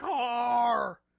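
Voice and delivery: stretched-out yell of car. Joking that Rick sounds like he shouts for a car: imitating Rick shouting "car". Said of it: "he's shouting for a fucking car".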